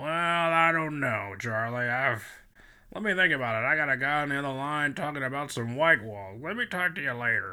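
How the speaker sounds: raspy put-on voice. Retelling how the manager answers the job offer: imitating Lou Brown's raspy voice. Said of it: "Lou's got this raspy voice".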